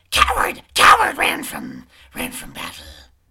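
shouting monster voice. Narrator voices a creature perched like a bird, looking at St. Hayes, shouting. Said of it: "it just starts shouting these random words".

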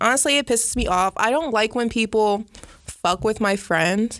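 ordinary delivery

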